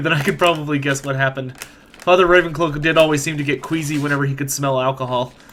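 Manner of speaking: plain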